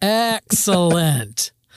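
put-on very slow, drawn-out, elderly-sounding delivery. Repeating the word excellent, this time very slow and drawn out. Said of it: "I feel like I should say it very slowly now".

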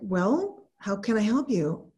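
plain

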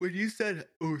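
speaking mid-yawn. Starting a question about a game the other speaker mentioned, yawning. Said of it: "sorry, I'm yawning".

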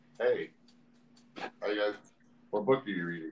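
put-on, mock whisper. Showing friends how Mike whispers in a library, imitating Mike's library whisper. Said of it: "This is Mike's whisper in a library".

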